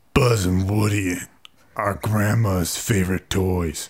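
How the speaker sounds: put-on grumpy old man voice. Playing a voice game, saying the assigned sentence: grumpy old man voice. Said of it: "just grumpy old man".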